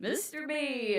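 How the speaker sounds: high, slow, called-out yell. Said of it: "they'd yell out".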